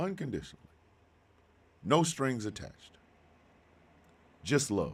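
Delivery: holding back tears. Speaking about being loved unconditionally, holding back tears. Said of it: "I'm gonna try to do this without crying".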